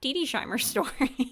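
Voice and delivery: giggling through the words. Introducing the next story, laughing while talking. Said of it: "I don't know why that makes me laugh".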